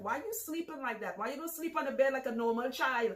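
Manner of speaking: put-on Trinidad accent. Recalling her mother asking why she sleeps sideways: mother's Trinidadian accent. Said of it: "in her Trinidadian accent".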